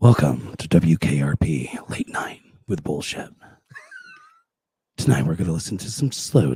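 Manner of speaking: low, swooping late-night radio DJ patter. Speaker musters up his own version of the intro: late-night radio DJ voice. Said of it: "Let me see if I can muster up mine".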